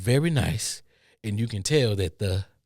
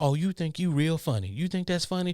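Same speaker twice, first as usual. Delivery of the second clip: higher female-sounding voice; 8 semitones higher than usual. Retelling what was heard in a store aisle: imitating a woman's voice. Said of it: "I heard a woman voice say".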